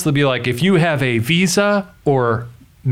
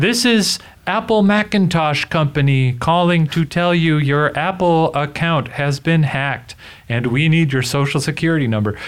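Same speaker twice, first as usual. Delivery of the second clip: automated, recorded machine phone-message robot voice. Imitating the automated message of a scam phone call: automated robot voice. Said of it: "like a robot voice".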